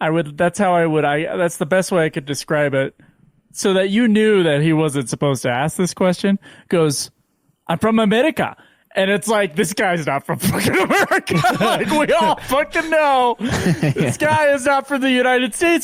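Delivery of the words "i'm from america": put-on short, sharply delivered, curt tone. Retelling what a guy said when asked a question: imitating a sharp reply. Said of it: "this guy very like sharply".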